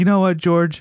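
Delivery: happy, high, loud, cheery voice.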